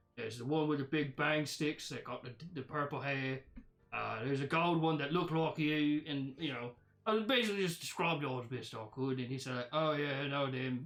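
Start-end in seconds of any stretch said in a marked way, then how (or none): 9.7-10.9 put-on droll, flat monotone, slower. Retelling a man's reply after describing friends to him, imitating his droll monotone. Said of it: "with a very kind of like droll, monotone voice".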